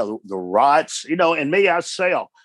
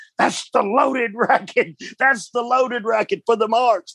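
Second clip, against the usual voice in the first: put-on high-pitched screaming; 8 semitones higher than usual. Retelling being hit with a racket: imitating Jim Cornette screaming. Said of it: "Cornette screaming, going".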